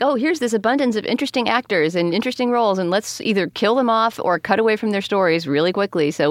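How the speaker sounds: normal talking voice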